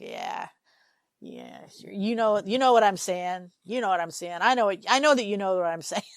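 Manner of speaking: mock, heavy sarcasm, dripping. Voicing what an actor's expression says in a scene: imitating Smoking Man, sarcastic. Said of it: "really sarcastic, like".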